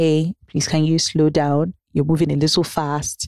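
very calm, gentlest, softest voice. Asking a raging, reckless driver to slow down, in the calmest, gentlest voice. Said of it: "in the calmest, most gentlest of voices".

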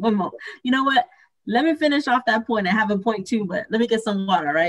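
voice catching, choked up, fighting back tears. Pausing her point in a group conversation to get water, holding back tears. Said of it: "Sorry, I'm not going to cry".

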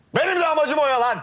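high, loud shout. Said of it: "Bağırma lan".

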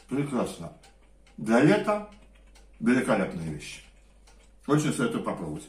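talking with mouth full. Recommending a dish while eating it, talking with mouth full. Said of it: "что горовлюсь с полным ртом".

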